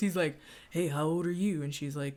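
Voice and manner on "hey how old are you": put-on sleazy, creepy old man voice. Recapping a scene, imitating how creepy old men talk: creepy old man voice. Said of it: "they just all kinda talk like this".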